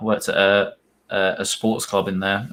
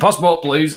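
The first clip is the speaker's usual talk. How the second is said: put-on raised, pitched-up northern English accent; 7 semitones higher, 6 dB louder than usual. Imagining somebody at the Watford Gap asking for passports: northern accent. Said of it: "just with a red northern accent".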